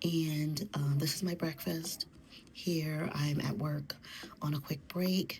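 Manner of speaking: soft hushed whispering. Filming your breakfast at work on a quick break, whispering. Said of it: "So that's why I'm whispering".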